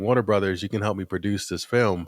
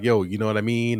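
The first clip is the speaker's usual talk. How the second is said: casual regular-guy voice. Describing how a film director talks in interviews: imitating his casual talk.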